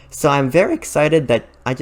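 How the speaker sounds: excited, voice breaking mid-sentence. Speaker saying they're excited about a game coming to Switch; voice cracking. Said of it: "my voice just cracked".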